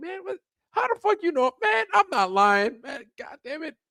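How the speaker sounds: very high, aggrieved, indignant protest. Speaker recalls answering the judge yelling on the show, retelling an annoyed protest. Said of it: "I'd be like".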